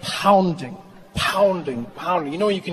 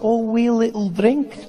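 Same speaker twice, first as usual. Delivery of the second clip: put-on Scottish accent, slower; 6 semitones higher than usual. Describing how scottish people offer a drink, imitating them: scottish accent. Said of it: "Scottish people do that so well. They're like".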